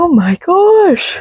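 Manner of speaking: stretched out through a yawn, very high-pitched. Talking about a horror book, the speaker says this while yawning. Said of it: "I don't know why I'm yawning so much".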